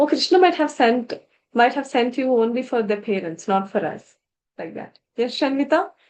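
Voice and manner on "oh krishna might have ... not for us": ordinary talk, nothing marked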